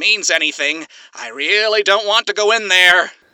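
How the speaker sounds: slightly strained voice. A wounded character, just carried over a shoulder, speaks with a slightly strained voice. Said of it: "voice still strained slightly".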